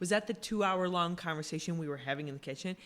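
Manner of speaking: normal talking voice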